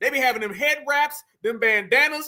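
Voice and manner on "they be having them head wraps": normal talking voice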